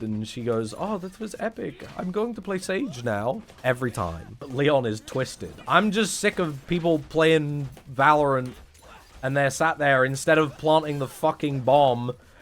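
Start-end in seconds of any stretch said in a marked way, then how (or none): 0.8-3.4 put-on Swedish accent in a higher pitch. Mocking a girlfriend playing Valorant: imitating a Swedish gamer girlfriend. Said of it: "but they're actually, like, Swedish".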